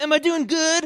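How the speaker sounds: high, loud obnoxious grunting voice. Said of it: "really obnoxiously grunting and going".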